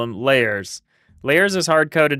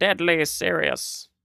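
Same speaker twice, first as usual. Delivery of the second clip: bad, breathy, whispered put-on character voice; 6 semitones higher, 4 dB quieter than usual. Reading a chat comment aloud, trying The Monarch voice. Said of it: "I was trying to do, like, a Monarch".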